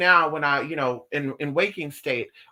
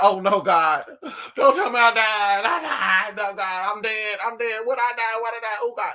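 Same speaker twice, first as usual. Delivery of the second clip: silly, theatrical, drawn-out, pitched-up panic; 6 semitones higher than usual. Retelling being pushed into a room in a dream: retelling own panic. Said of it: "Bitch, I'm panicking".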